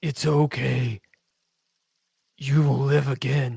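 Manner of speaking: garbled, distorted creature voice. Voicing a creature as it comes down and speaks: garbled voice. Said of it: "says in a garbled voice".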